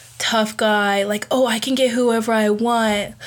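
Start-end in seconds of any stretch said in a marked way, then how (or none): none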